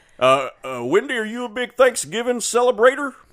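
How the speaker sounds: put-on Texan accent. Seeing how long the voice lasts while talking to Wendy, fake Texas accent. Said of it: "Let's see how long I can do this".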